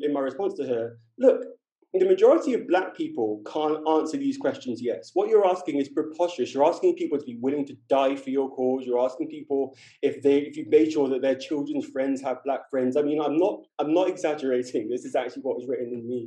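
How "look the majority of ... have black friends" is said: ordinary talk, nothing marked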